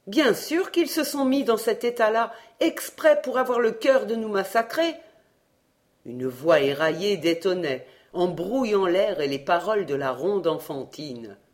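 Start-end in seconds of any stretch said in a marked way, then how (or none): 0.1-4.9 high voice, green with terror. He answers the narrator's question, terrified. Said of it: "vert d'effroi".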